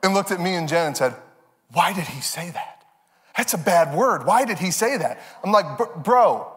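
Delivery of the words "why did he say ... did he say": put-on aghast, shocked child's voice. Retelling how a child reacted to a bad word on tv: imitating a shocked child. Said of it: "audibly gasped".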